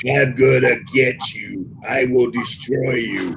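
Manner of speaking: put-on loud disembodied voice. Retelling a voice that everyone in the group heard, loud disembodied voice. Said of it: "you hear this voice like um, disembodied, right? But really loud".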